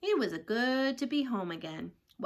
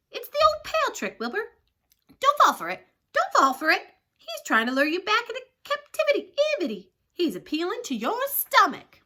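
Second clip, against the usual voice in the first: very high, shrill, loud, excitable, bossy goose voice; 9 semitones higher, 7 dB louder than usual. Narrator reading a story, the goose speaks to wilbur: goose giving orders. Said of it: "The goose took command and began to give orders. / she shouted to [name]. / The goose took command and began to give orders".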